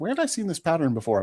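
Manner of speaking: rapid, high, inquisitive voice. Retelling what Andrea asked about a new shirt: imitating Andrea. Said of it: "as your impersonation of her".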